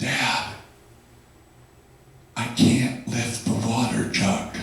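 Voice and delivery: hushed whisper, spoken slowly. Retelling how a five-year-old son woke him: imitating a child's whisper. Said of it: "whispers in my ear".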